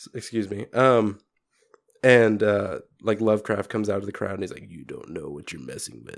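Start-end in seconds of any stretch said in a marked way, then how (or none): 4.7-6.2 put-on very quiet, murmured goth kid voice. Retelling a game scene where Lovecraft warns Tesla: Lovecraft as goth kid voice. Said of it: "such a goth kid".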